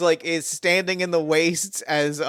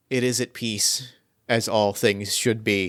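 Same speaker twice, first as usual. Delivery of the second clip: voiced, hushed stage whisper; 6 semitones lower than usual. A defeated foe speaks as the graveyard collapses around him: quiet half-whisper. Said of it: "he quietly just like whispers".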